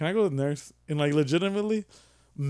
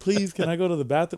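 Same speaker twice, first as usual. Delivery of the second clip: put-on, mock-polite pleading tone; 3 semitones higher than usual. Retelling how he begged her at first to go, imitating a polite plea. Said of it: "I'm being polite at first".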